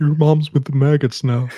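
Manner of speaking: strange, creepy, possessed-sounding demon voice. Repeating a line from demons taking over bodies: weird demon voice. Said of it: "weird voice? Like".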